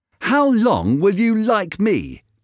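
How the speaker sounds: cross, angry voice, pitched very high. Dorian questions Hallward after accusing him of loving his painting more, angry. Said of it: "Dorian seemed quite angry".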